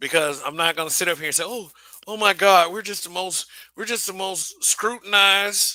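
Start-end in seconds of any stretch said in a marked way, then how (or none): 1.5-5.7 pitched-up, put-on sarcastic tone. Mocking a complaint the speaker refuses to make: put-on sarcasm. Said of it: "the little sarcasm I'm using".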